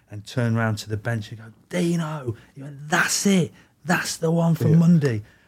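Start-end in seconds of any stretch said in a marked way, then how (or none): 1.7-5.2 put-on loud, booming shout. Retelling a coach calling to the bench after a save: imitating a loud booming shout. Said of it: "big, positive, massive, loud, booming voice".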